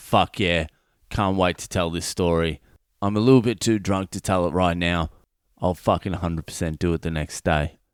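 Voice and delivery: ordinary talk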